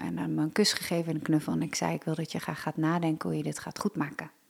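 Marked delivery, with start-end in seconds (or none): 1.9-4.3 calm, quieter delivery. Recounting what the speaker told him at bedtime, retelling calm words. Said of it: "gewoon kalm".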